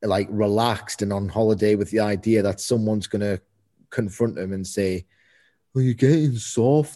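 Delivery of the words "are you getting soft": rough, put-on attempt at a Birmingham (Brummy) accent. Imagining a wrestler confronting Finn Balor, attempted Tyler Bate Brummy accent. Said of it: "That's me trying to do a Brummy accent".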